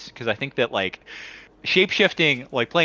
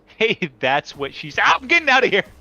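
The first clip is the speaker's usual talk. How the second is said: normal talking voice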